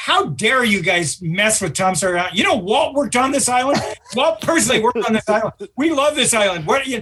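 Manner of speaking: high-pitched, rising, indignant scolding tone.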